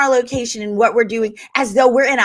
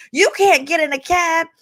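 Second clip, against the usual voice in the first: feeble, weak, wimpy man's voice, higher pitched; 6 semitones higher than usual. Retelling what a man told her about getting a cab; mocking a wimpy man's voice. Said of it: "he just sounded like a total pussy. So I had to say it like that".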